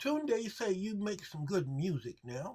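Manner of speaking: very high, goofy, silly cat voice. Speaker imagines the cat's comment on his music, in a silly cat voice. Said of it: "that's my cat voice".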